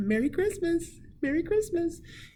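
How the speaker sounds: lilting, sing-song delivery. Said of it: "She'd always say".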